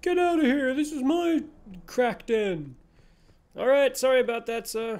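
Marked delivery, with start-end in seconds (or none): 0.0-2.7 slow, crazed, unhinged screaming rant. Imagining a homeless person behind the wall: pretend screaming homeless person. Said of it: "crazy homeless person behind here just screaming at me".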